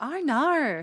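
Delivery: weak put-on Australian accent, pitched high. Showing the other speakers one of their accents: an Australian accent. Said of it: "That's my Australian accent".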